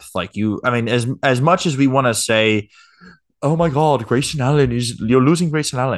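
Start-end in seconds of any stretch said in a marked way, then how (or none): 3.4-6.0 sudden slip into a put-on British accent. Mocking what fans say about losing a player, in a British accent. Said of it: "I don't know why I went British there".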